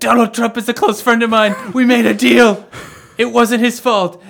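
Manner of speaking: acted frantic panic, pitched way up and loud. Retelling a man's begging, then the next part in a mock-panicked voice. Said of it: "he's in a panicked voice".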